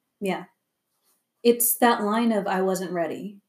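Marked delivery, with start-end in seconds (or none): none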